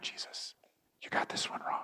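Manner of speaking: unvoiced, whispered aside.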